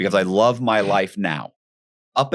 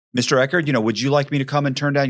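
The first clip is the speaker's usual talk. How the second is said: polite hotel service-staff voice; 3 semitones higher than usual. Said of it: "the whole staff is like".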